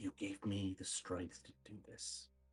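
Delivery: quietly whispered. Speaking in character to a friend during a hug: whispering. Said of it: "I will whisper to him".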